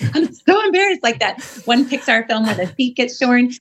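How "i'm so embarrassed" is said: pretend panicking voice, higher. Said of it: "It's not freaking out like".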